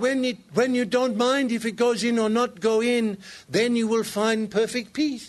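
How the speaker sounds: put-on Indian accent. Recounting what a man told the speaker about golf frustration, in an Indian accent. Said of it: "he's speaking a little bit with an Indian accent".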